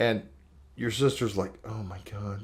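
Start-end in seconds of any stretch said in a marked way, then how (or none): 1.6-2.4 embarrassed, flustered exclaiming tone. Retelling the sister's reaction in a phone store, imitating someone embarrassed.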